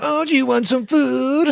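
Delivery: taunting, mocking tone, pitched way up. Voicing a cat repeating its owner's words: imitating a mocking tone. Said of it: "saying exactly what you said back in a mocking tone".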